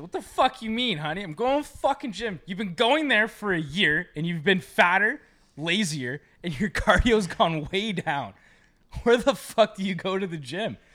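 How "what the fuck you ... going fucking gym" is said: put-on drunken slur, much higher, louder. Imagining someone drunkenly insisting they're going to the gym, the speaker imitates drunk slurring. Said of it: "Fucking slurring your words".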